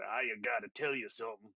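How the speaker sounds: deep Southern drawl, each word run into the next. Trying out the character Darko's voice for the table: Darko voice, deep southern drawl. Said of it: "sounds like he's just rolling all of his words together".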